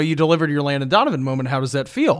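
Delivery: ordinary talk, nothing marked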